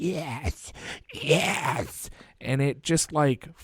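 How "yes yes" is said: hushed, whispered demonic female voice. Retelling a voice heard on a cemetery recording, in a demonic female voice. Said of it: "this like demonic female voice of like".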